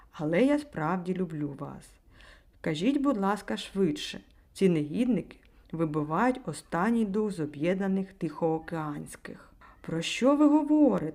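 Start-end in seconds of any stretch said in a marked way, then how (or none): 9.8-11.1 loud, high-pitched exclamation. A young woman answers a man's sudden proposal, exclaiming. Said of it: "вигукнула молода жінка".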